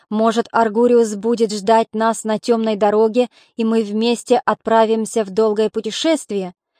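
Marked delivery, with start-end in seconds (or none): none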